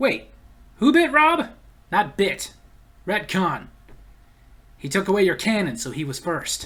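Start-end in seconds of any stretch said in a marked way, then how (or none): none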